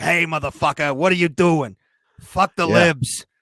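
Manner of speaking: put-on character voice with a Brooklyn accent. Continuing to imitate the referee: imitating Terry McNeely's voice. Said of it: "I kinda made him sound like Terry McNeely".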